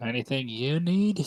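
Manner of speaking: put-on spoken with an Irish accent. A woman offers the visitors anything they need, in an Irish accent. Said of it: "her Irish accent".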